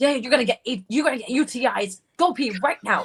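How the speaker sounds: angry scolding. Retelling how her doctor dad scolds her to go pee: imitating an angry dad. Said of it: "my dad gets so mad at me".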